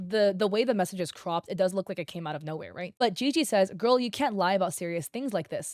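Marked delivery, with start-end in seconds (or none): none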